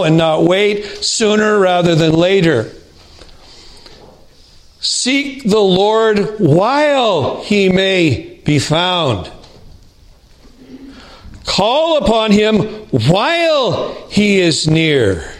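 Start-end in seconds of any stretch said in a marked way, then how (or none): 4.8-15.2 slow reading, stressing the urgent words. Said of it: "I'm gonna emphasize the words that imply you need to do it now".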